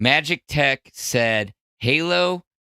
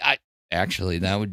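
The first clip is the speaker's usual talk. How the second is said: usual speaking voice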